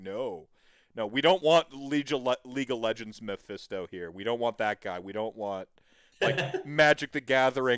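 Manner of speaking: normal talking voice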